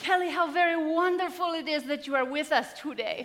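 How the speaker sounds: put-on very loud, high, booming Greek accent. Pausing the class to greet Kelly, a student walking in late, in Dr. Hintzoglou's Greek accent. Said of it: "he would say in his beautiful Greek accent".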